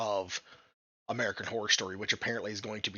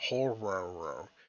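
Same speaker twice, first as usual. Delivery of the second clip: soft Southern horror voice with er ending. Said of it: "my southern accent takes off the O R at the end, and just puts an E R at the end".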